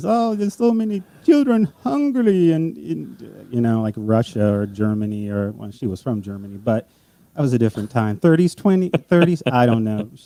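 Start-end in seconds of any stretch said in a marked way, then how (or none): 0.0-2.5 coaxing, very high-pitched little German lady voice. Retelling how a mother urged a child to eat: imitating his german mother. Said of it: "and she says".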